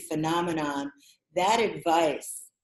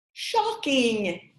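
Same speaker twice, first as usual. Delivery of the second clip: fake English accent, pitched up; 6 semitones higher than usual. Asking the co-host to say a trigger word, saying it in an english accent. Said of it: "say shocking in your best English accent".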